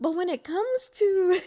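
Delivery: talking through laughter. Explaining how they react to politics: laughing while talking. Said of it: "I'm sorry for laughing".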